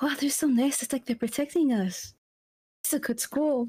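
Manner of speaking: whispering in a put-on character voice. Playing a character whispering to Damon about the guards: character whispering. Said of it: "when she whispers to Damon".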